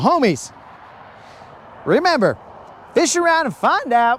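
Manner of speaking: sudden voice crack, breaking mid-phrase. Talking to the homies watching him: voice cracks. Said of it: "pre-post pubescent voice crack".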